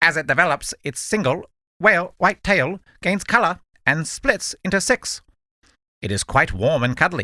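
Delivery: small electronic gadget voice, read-out style. Reading a Pokédex entry aloud to a co-host: little Pokédex voice. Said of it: "Little Pokedex voice".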